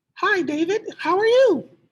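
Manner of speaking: very high, squeaky cartoon mouse voice. Speaker re-records a greeting to David, wanting a female voice, cartoonish mouse-like voice. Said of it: "Kind of sounded like Mickey Mouse".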